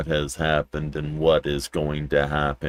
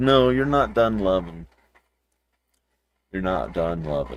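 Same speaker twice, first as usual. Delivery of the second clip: puppy voice, higher; 3 semitones higher than usual. Speaking for the pup after petting him: voicing the dog's thoughts. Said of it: "and now he's like".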